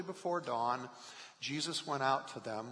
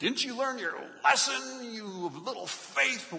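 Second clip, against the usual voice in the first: mock very high, harsh, shrill scolding tone; 10 semitones higher, 7 dB louder than usual. Acting out Jesus rebuking Peter, as some hear it: mock-harsh scolding as Jesus. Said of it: "some hear the words that Jesus said like Jesus is rebuking Peter".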